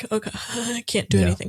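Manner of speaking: play-acted big, ugly sobbing breakdown, panicked words. Retelling own past panic attacks at the gym, imitating own past panicked crying. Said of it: "big, ugly crying".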